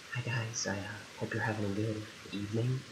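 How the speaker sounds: very quiet, hushed ASMR-style half-whisper. Trying out asmr for viewers over rain sounds, asmr half-whisper. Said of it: "I'm gonna do ASMR over the rain sounds".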